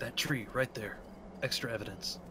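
soft whisper. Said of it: "Why are we whispering?".

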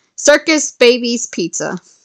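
plain reading voice

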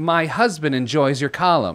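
play-acted, really aggressive, pushy, needling, pointed tone. Recalling a woman on a plane who addressed the speaker, retelling an aggressive remark. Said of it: "it was really aggressive".

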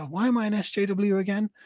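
play-acted, lightly sarcastic, insincere little aside. Retelling a moment from a video: sarcastic Natalie Wynn imitation. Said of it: "that kind of little sarcastic look at the camera".

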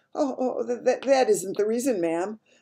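badly trembling voice. Narrator reading the maid's reply, voice quivering terribly. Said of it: "The maid's voice was quivering terribly".

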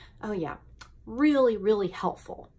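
mildly sarcastic, mock approving tone. Reacting to diet advice about glucose spikes and crashes, a little sarcastic. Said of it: "I know I'm being a little sarcastic".

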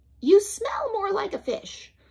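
very high, small, squeaky mouse voice. Reading a story aloud, voicing the mouse riding on the whale's back: squeaky Amos mouse voice. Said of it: "[name], a mouse, ... the small voice, ... squeaked [name]".

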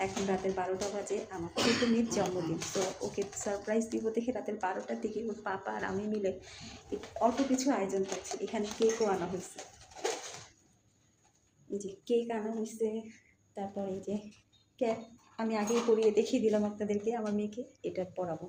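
soft, hushed, quiet speech. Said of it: "আমি আস্তে কথা বলছি".

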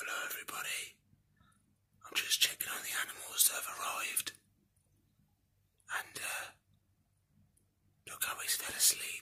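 soft, unvoiced, quiet whisper. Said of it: "I don't wanna speak too loud".

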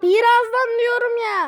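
loud, high, exasperated shout.

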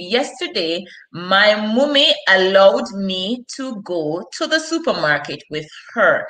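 ordinary delivery

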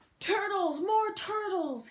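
booming, braying, roaring bellow. A narrator voicing the king's command in a story, bellowing and braying. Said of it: "he bellowed and brayed".

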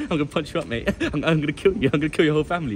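put-on giggling, passive-aggressive, menacing tone. Retelling a man's threats after an encounter: imitating a passive-aggressive man. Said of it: "that guy was the most passive-aggressive guy".

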